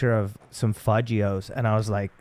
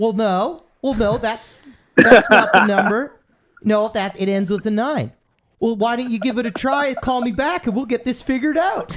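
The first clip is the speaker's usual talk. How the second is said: very high, loud, overly nice, super-polite voice; 12 semitones higher, 5 dB louder than usual. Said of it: "he does this voice".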